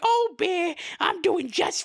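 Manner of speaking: high raspy put-on voice. Retelling a scene where Tutter answers Bear from the toilet: high raspy Tutter voice. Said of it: "his voice is just really high and it's like raspy".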